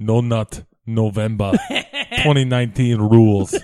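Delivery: put-on movie cyborg voice. Asked to read a written line in the Terminator's voice. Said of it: "Can you say this in the Terminator's voice?".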